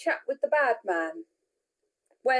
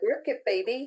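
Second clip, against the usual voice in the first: ordinary delivery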